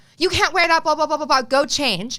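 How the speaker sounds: irate telling-off. Retelling how a staff member yelled about the swimsuit: imitating someone screaming. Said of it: "She was screaming at me".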